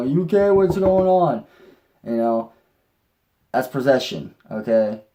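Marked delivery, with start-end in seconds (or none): 0.0-1.4 high, loud, panicked freaking-out cry. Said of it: "everybody around her starts freaking out, going".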